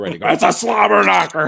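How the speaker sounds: high, loud wrestling-announcer call.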